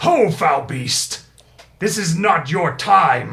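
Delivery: very loud, booming, high-pitched giant's bellow. Voicing a giant who bursts onto the scene and confronts a beast: voicing a giant. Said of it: "He says".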